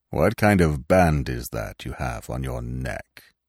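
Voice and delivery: quiet, low, commanding voice. The old stag breaks the silence to question Gobo, in a quiet, commanding voice. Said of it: "asked in his quiet, commanding voice".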